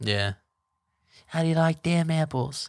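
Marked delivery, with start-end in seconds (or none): 1.2-2.7 put-on Boston accent, much higher, quieter. After someone praises the boston accent, answering in a boston accent. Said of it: "have a Boston accent".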